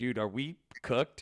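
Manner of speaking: put-on serious tone. Retelling a crypto buddy's worried question yesterday: imitating a serious tone. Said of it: "in, like, such a serious tone".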